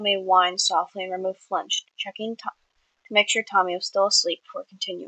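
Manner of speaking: ordinary delivery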